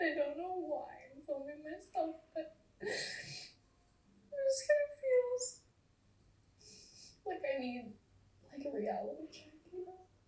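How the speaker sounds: talking through open, ugly sobs. Filming oneself to get a reality check, ugly crying. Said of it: "I am ugly crying right now".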